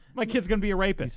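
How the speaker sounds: put-on, loud, fake shouting. Mocking an upset parent during a debate on public nudity: mock yelling. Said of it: "Why are you yelling at me?".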